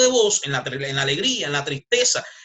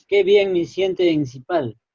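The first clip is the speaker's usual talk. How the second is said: mournful, downcast, sad, sorrowful tone. Student in a speaking class, asked by the teacher for a sad reading: sad tone. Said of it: "en tono de tristeza. Triste... eso es triste".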